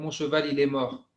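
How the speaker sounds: normal talking voice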